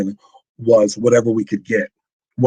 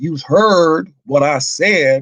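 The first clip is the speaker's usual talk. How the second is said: put-on Southern twang, pitched higher; 6 semitones higher than usual. Reading a mocking old product label aloud, imitating a Southern twang. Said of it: "they use the Southern twang".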